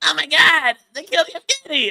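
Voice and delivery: shrill, loud, high cartoon squeal, done badly. Trying a South Park voice after a donation asks for it: bad South Park voice. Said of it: "Let me see if I can do it".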